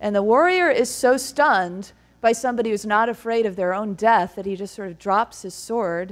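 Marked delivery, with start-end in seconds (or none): none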